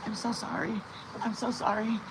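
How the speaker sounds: soft, meek voice, apologetic tone. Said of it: "she kept going like this".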